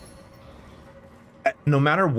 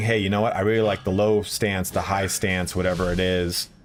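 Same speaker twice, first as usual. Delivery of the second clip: ordinary delivery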